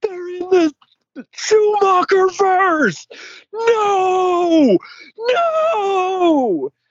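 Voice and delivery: the word no crying and screaming, a wail.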